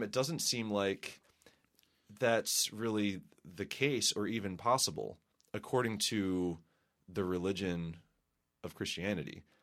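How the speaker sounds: slow, soft, musing voice. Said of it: "I don't know why I'm talking so slowly".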